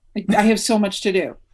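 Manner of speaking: ordinary talk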